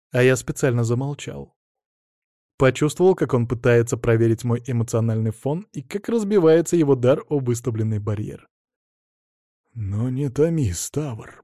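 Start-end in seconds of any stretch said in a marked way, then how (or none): 9.7-11.2 whispering, slower. Narrator reads a character urging another to reveal a secret, whispered. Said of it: "прошептал он".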